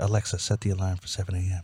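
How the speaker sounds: very quiet, barely audible half-whisper. Retelling how they gave the smart speaker a command: retelling a half-whisper. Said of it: "I'd whisper".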